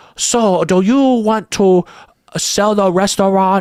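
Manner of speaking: caricatured put-on Japanese accent, high and slow. Retelling a movie scene of a guy talking to his wife: imitating a cartoonish japanese accent. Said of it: "speaking this cartoonish Japanese accent".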